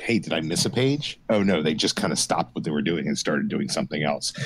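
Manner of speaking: ordinary talk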